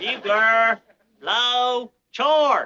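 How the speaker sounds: awful-sounding delivery. A learner practicing cavalry orders for a coach, in an awful-sounding military command. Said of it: "don't that sound just awful?".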